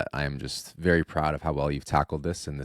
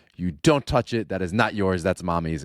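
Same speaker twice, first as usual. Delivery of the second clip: put-on small child's scolding, lecturing voice; 4 semitones higher, 5 dB louder than usual. Recounting how a toddler scolded the speaker, imitating Cora scolding. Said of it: "she's scolding me like this".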